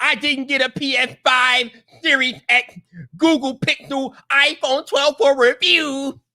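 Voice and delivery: slow high whine. Reading out a tweet that mocks YouTubers: mocking whiny YouTuber voice. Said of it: "he goes into a whiny YouTuber voice".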